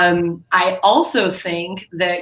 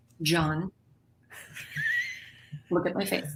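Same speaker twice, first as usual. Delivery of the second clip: very quiet, hushed, serious motherly voice; 12 dB quieter than usual. Asked to demonstrate the mom voice: deeper, much quieter mom voice. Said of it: "it's deeper than, and it's actually much quieter".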